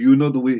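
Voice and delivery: put-on Jamaican accent. Recalling a character's voice from a cartoon: imitating a Jamaican voice. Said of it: "where he had the Jamaican voice".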